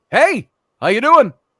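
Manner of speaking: very loud, cheery, upbeat tone. Retelling how he greeted store customers: imitating his cheerful clerk voice. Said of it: "That kind of voice".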